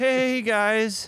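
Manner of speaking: meek, timid, very high-pitched little voice. Opening the podcast in a put-on voice: imitating Matt's high-pitched voice. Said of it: "the high-pitched voice again?".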